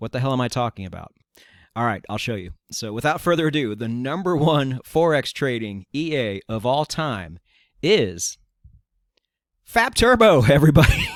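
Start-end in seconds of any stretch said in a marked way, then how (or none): 3.7-11.1 loud, slow, words broken up by laughter. Naming the top-selling trading robot on a fifth take: laughing while talking. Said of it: "I cannot do it without laughing".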